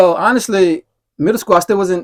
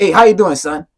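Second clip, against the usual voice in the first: imitated crazy voice. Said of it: "he come in the gym with a crazy voice".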